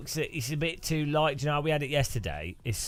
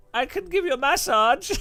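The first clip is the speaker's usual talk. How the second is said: loud, high-pitched put-on Swedish accent; 14 semitones higher, 7 dB louder than usual. Recalling a woman who kept insisting, the speaker quotes her offering a massage: put-on swedish accent. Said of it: "It was like Swedish accent".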